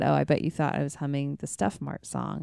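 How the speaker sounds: ordinary talk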